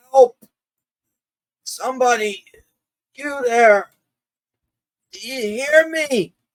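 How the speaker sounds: very high, feeble, weak shouting. Narrator voicing an elf stuck up in the trees, weakly shouting. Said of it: "he's weakly shouting".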